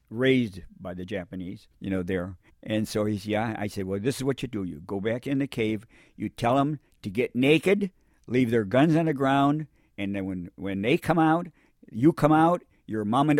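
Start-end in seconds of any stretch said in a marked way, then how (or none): none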